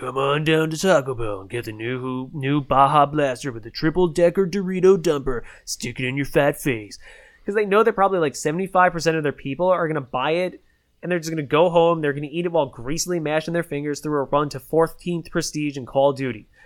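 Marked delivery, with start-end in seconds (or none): 0.0-7.0 over-the-top, low, gravelly nineties dude voice. Imitating a Taco Bell commercial: gravelly nineties dude voice. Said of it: "the most grovelly nineties dude voice".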